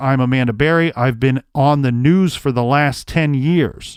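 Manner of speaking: ordinary talk, nothing marked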